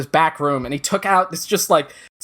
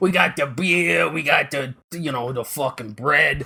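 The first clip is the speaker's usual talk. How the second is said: put-on Staten Island guy voice. Retelling how the men running a brew house talked: imitating Staten Island guys. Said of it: "It was all guys like this".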